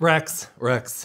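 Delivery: put-on straight man voice. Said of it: "That was your straight accent?".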